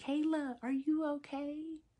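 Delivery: playful teasing concern. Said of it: "bust out laughing and was like".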